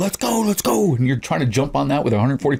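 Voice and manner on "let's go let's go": shrill, very high, repeated hollered yell. Retelling the fifty cal gunners during a pickup: imitating someone yelling. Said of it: "the fifty cal gunners yelling".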